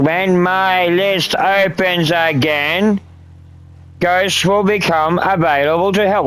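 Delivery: slow, measured, careful, deliberate, word by word. Announcing when the list opens again, slow and deliberate. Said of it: "I will say it slowly and with simple words".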